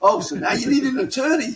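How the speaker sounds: very high, loud, jeering mocking shout, acted out. Recounting a meeting, quoting a man's reply to the speaker: retelling a shout. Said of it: "He starts shouting at me again".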